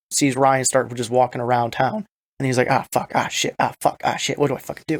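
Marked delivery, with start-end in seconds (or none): 2.7-5.0 acted flustered, alarmed, panicked stream of curses. Retelling a show scene where a kid sees someone and imitating panic. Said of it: "he starts panicking a little bit".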